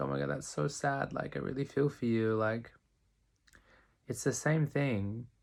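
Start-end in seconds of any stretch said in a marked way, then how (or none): 0.0-2.3 weepy, pitched-up, tearful sympathy close to crying. Talking about sympathy, the speaker acts out a listener: imitating someone in tears. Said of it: "someone's like in tears going like".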